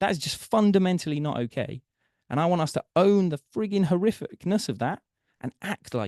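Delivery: heartfelt, emotional voice rising high. Speaker talks to the group and apologizes, getting emotional. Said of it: "I'm really getting quite emotional here".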